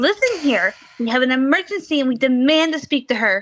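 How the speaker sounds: entitled, demanding voice. Speaking in character to a doorkeeper: put-on Karen voice. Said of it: "You just put on the Karen voice".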